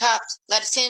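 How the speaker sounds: put-on demanding police officer shout, high and hard. Retelling police banging on the door: imitating a police officer yelling. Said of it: "one of them yells".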